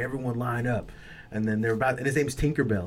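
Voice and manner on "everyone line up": ordinary delivery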